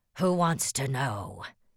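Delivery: loud, snarling, snarled delivery. Narrator reads Dom's reply to the stranger, snarling. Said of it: "Dom snarled".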